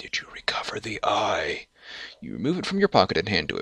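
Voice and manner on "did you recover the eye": quiet, low, hushed whisper. Narrator reads Artemis motioning the listener close and asking, in a low voice. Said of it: "asks in a low voice".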